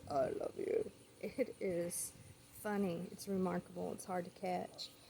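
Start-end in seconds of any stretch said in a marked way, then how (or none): 0.1-0.9 deep, low put-on voice, dropped right down. Showing how she says it when nobody responds: imitating a deep voice. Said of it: "she's going to do it in a deep voice".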